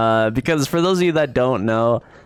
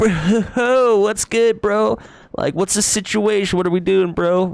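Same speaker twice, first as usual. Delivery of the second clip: very high-pitched dude bro voice; 10 semitones higher than usual. Describing a voice they've been doing lately, the speaker demonstrates a dude bro voice. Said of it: "what I refer to as like a dude bro voice".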